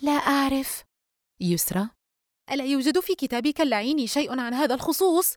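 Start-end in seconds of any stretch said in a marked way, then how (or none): 0.0-0.8 puzzled, uncertain, at a loss. [name] answers her friend Yusra's question on the phone, puzzled. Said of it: "دينا بنبرة حائرة".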